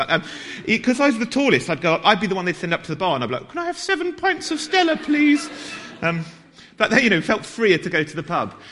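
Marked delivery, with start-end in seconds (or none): 3.5-5.5 very high-pitched voice, slower. Retelling being sent up to the bar as the tallest, in a high-pitched voice. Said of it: "even though I had a really high-pitched voice".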